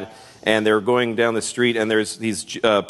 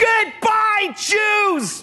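put-on high-pitched little girl voice, yelling.

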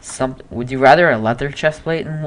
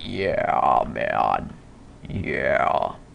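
put-on whispered, hushed, breathy old man voice; 10 semitones lower, 6 dB quieter than usual. Speaker says he sounds like the Bad Grandpa guy, then impersonates him: Bad Grandpa impression. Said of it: "I'm gonna impersonate him".

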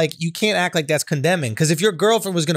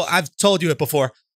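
normal talking voice

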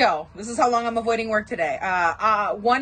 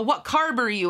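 usual speaking voice

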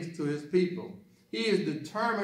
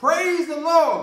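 very loud, shrill, high-pitched holler; 11 semitones higher, 9 dB louder than usual. Telling a joke, acting out an elderly woman on her porch: acting out a shout. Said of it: "She would stand on the porch and shout".

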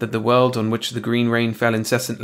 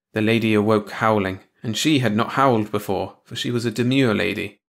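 ordinary delivery

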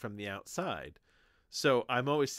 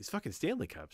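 mock exasperated, fed-up tone, much quieter; 3 dB quieter than usual. Retelling a woman's complaint about everyone having Stanley Cups: imitating her exasperated tone. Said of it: "but this is her tone".

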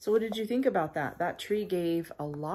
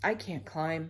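plain

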